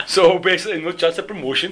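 intended English, sounds Indian. Asked to do an English accent, the speaker tries, in an accent that sounded Indian. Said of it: "That sounded Indian".

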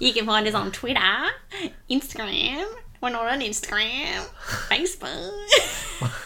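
loud, swooping, sing-song put-on Australian accent. Podcast host gives the sign-off details on where to find the show: Australian accent. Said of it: "Why the Aussie accent?".

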